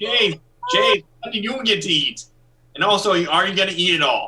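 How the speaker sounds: shrill, high, loud, full-voiced shout. Asking another person what they get to eat: yelling. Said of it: "Who are you yelling at?".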